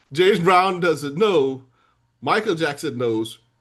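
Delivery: normal talking voice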